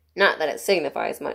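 ordinary delivery

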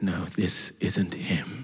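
very low, deep, slowly dragged-out prophet voice. Retelling the story as Jesse presents a son to Samuel, in Samuel's prophet God voice. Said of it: "in his prophet God voice".

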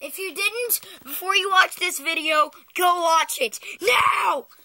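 very loud, high shouting. Addressing viewers at the start of a video, yelling at them. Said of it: "you don't have to yell".

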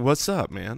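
laid-back, subdued, very chill voice. Imitating own phone voice after being told it sounds subdued: imitating own mega chill phone voice. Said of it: "sound like you are in full-on mega chill mode".

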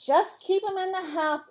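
commanding farmer voice. Farmer Brown gives Bob an order, commanding. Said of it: "ordered Farmer Brown".

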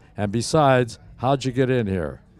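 ordinary talk

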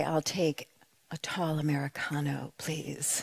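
very noble, stately, dignified manner. Retelling ordering coffee from a barista, imitating own very noble way. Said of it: "in this very noble way".

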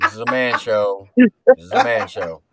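loud, booming mock tough-guy teasing.

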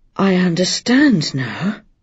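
quiet, soft-spoken voice. Reading a story aloud, a man speaks after putting a letter down: quiet. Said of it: "he said quietly".

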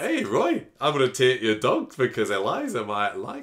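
put-on a bit of a Scottish accent. Recapping a storyline and quoting a character, slight Scottish accent. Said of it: "I've got a bit Scottish now".

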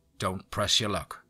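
hissed, hissing delivery. A scowling man walks up and warns the narrator, hissed. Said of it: "he hissed".

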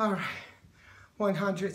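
breathless, winded speech. Finishing a set of jumps while counting aloud, out of breath. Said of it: "still out of breath".

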